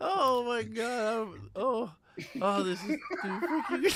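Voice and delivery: words breaking through laughter. Reacting to a funny photo shown on screen, laughing while talking. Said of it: "I can't stop laughing".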